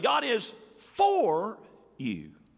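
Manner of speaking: stress on FOR. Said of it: "you could put it this way".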